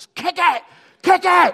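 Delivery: very loud, very high-pitched hollering yell. Retelling cheering at the kids' soccer games: imitating own yelling. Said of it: "I found myself just always yelling".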